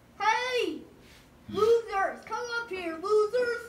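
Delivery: loud shouting. Calling the others to come up to him, yelling down a vent. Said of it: "Why are you yelling down the vent".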